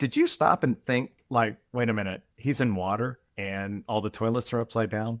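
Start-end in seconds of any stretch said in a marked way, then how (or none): none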